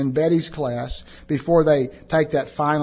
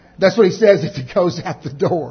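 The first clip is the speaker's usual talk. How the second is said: usual speaking voice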